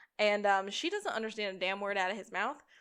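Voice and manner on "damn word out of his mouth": ordinary talk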